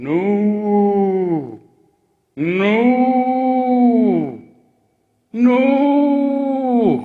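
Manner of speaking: loud, high, cow-like moo stretching each no. Asked whether he's a dog, he answers: mooing like a cow. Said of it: "now you're you're sounding kind of like a cow".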